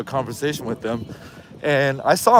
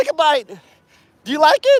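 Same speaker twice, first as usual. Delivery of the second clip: very high, swooping put-on voice; 14 semitones higher, 4 dB louder than usual. Doing an impersonation of a taco shop owner comparing burritos: impersonating a taco shop owner. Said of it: "his, uh, impersonation".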